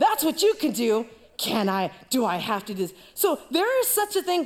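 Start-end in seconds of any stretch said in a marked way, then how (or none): 0.0-2.9 mock passive-aggressive scolding tone. Retelling mom's answer about the dishes: imitating mom, passive aggressive. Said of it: "my mom, passive aggressive".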